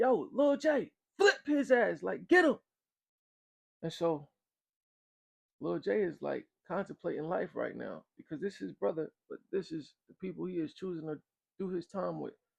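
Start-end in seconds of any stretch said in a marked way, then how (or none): 0.0-2.6 mock, very high, shrill, drawn-out screaming. Storyteller retelling the people yelling at lil j; imitating people screaming. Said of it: "the people are still screaming".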